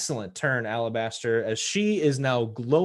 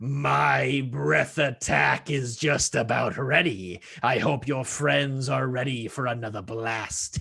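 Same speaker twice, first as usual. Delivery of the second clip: hissing dragon voice, "my" stretched out long. Mid-combat, the game master voices a draconic foe addressing a player: hissing. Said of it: "She hisses at you as she says".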